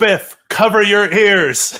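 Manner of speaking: loud, high, drawn-out yell. Warning Biff in character as a knife is flung: yelling. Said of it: "I yell".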